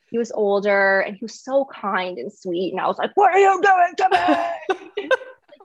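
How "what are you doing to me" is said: put-on shrill, high, loud, freaked-out, frantic yell. Retelling yelling at the kind older doctor, imitating her own yelling. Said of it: "yelling at him".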